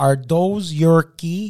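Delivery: put-on slowed Québécois-accented voice. Retelling how a cop in a store spoke, imitating a Quebecer accent. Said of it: "his imitation of a quebecer made me laugh he says".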